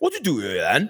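belligerent, strong put-on West Welsh accent. Retelling what a man with a west wales accent asked him: imitating a west wales accent. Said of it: "the accent that I do for the belligerent Welsh person".

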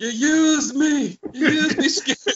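put-on very high yell in a Scottish accent. Recalling a favorite scene, doing Groundskeeper Willie yelling at Seymour Skinner. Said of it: "He starts yelling at Seymour Skinner".

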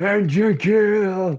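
very high, loud, wild roar of triumph. Recounting a tense game moment, acting out what he roared: retelling a roar. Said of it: "Then I just fucking roared".

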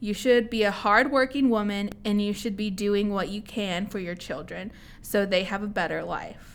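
ordinary delivery

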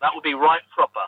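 awful, clumsy put-on British accent. Joking about having tea and scones over a video call: awful put-on British accent. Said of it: "That was an awful, awful accent".

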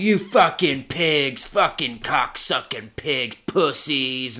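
put-on, slow, hostile, belligerent cursing. Retelling cussing at cops while being arrested: imitating own belligerent cussing. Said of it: "I start cussing at 'em".

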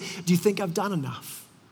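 faint, feeble, weak, soft voice. Retelling a dying older lady's question from her hospice bed: imitating a weak voice. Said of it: "she's laying in bed with this weak voice".

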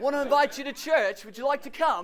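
put-on English accent. Recalling going door to door inviting people to church, in a fake English accent. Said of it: "we've got to do it with an English accent".

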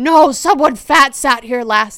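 very loud voice. Retelling what Grandma, sunk down in a booth, would say, really loudly. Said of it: "she'd just say really loudly".

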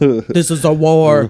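deep, serious voice in a flat monotone. Quoting a movie character's line after praising his very deep voice: Ken Foree impression. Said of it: "Let's not forget his voice".

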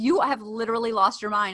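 usual speaking voice

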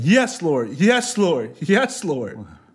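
high, drawn-out screaming repeated over and over. Retelling how it felt when the depression broke: retelling a scream. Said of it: "I just kept screaming".

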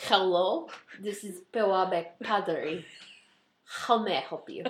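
put-on Russian accent. Suggesting a way to answer the phone at work, showing it: Russian accent. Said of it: "You should answer the phone like that at work".

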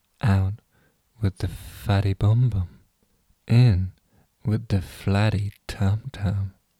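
slow, ASMR-style reading voice. Reading a sponsor slogan off paper: ASMR voice. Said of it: "reads it in her finest A S M R voice".

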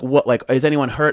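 ordinary talk, nothing marked

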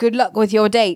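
put-on British accent. Recapping a show scene, voicing Marlena's reply to Roman in a British accent. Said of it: "in a British accent".

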